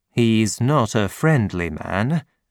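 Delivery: plain reading voice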